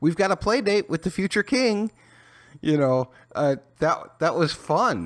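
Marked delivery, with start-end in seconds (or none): 0.0-1.9 mocking put-on voice, much higher and faster. Recalling a woman's line from the season's first episode, mockingly quoting her. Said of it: "she mockingly said".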